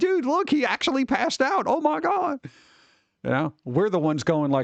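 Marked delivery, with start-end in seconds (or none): 0.0-2.4 put-on laughing children's voices, higher. Retelling how kids reacted to someone passing out: imitating kids laughing while talking. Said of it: "kids would just be, like, laughing".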